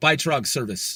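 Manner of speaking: clearly enunciated, sounded-out American accent. Saying 'Bytestrug service' in English: enunciated American English inflection. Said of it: "Say it in English, just like with the American like inflection enunciated like".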